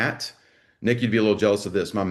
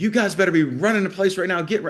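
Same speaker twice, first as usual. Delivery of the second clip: acted, high-pitched, furious angry screaming; 10 semitones higher than usual. Retelling screaming at a class of kids: imitating himself screaming angrily. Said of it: "I'm just screaming at 'em".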